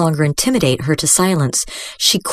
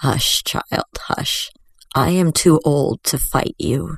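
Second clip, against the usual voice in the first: put-on slow, kind, aged grandmotherly voice; 2 semitones lower than usual. Narrator reads the witch hushing the girl, in an old, kind grandmother's voice. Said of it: "Her voice was old and kind, like a grandmother's voice".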